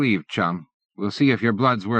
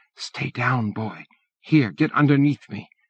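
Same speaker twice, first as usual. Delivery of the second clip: put-on elderly woman's voiced stage whisper; 2 semitones higher than usual. Reading a story aloud, a grandmother hides a boy: half-whispering old woman. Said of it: "The old woman whispers to the screen".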